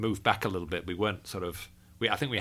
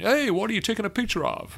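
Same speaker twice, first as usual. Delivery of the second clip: fake American accent, very high-pitched; 13 semitones higher, 4 dB louder than usual. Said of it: "I love your American accent".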